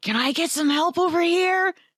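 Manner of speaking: very high, strained shouted whisper. Calling out to the others for help: whisper-yelling. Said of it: "Whisper yell".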